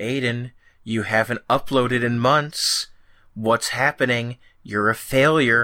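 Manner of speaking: plain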